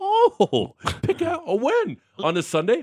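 mock high-pitched voice. Retelling his own reply to his girlfriend's apple-picking idea, in a high voice. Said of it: "So your voice gets high".

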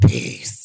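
deep, pained put-on voice. Signing off to listeners until next week in the deepest pain voice. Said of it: "in my deepest pain voice".

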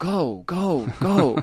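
put-on small, high voice of a three-year-old. The speaker quotes a 3-year-old riding along in the car, imitating a 3-year-old's voice. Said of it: "in his little 3-year-old voice".

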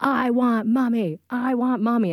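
put-on child's voice freaking out, fully defiant. Retelling a son refusing bedtime with dad: imitating a child freaking out. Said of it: "he starts freaking out".

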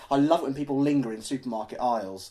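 normal talking voice

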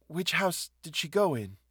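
tired, worn-out tone. A woman questions a boy who grins insolently at her; weary. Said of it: "she asked wearily".

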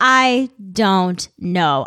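very slow, stretched-way-out "I don't know".

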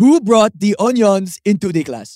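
put-on Nigerian accent. Asked to do the teacher's accent again, imitating her nigerian accent. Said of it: "do that accent again".

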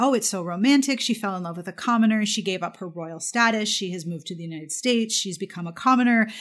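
normal talking voice

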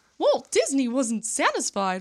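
squeaked out high and bouncy. Starting the Walt Disney story, then dropping it: awful Mickey Mouse impression. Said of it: "I'm not doing that. That was awful".

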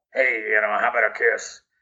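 put-on creepy little man voice. Imitating the creepy little man who harassed a girl on a park bench: Artie Johnson creepy little man voice. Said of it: "that was the voice".

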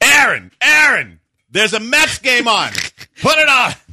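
put-on screaming. Acting out how Patrick would talk about the Mets to someone crying, screaming Patrick Creighton impression. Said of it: "It's a pretty good Patrick Creighton".

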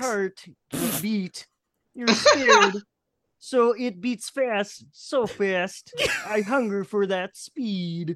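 deep voice of a turtle. Giving a turtle a voice in a bit, in a turtle voice. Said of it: "That is now the voice of the turtle".

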